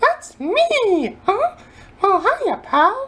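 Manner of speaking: high squeaky voice with the word "me" stretched out. Opening a video review, the host does the worst Mickey Mouse voice. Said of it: "Worst Mickey Mouse voice ever".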